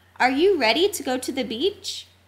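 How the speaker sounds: ordinary delivery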